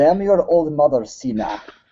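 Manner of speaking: high, fake Russian accent.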